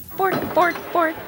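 borked out, high-pitched and silly. The speaker performs the Swedish Chef before talking about him, in a Swedish Chef voice. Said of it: "that is the Swedish chef. He sounds like that".

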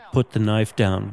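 ordinary talk, nothing marked

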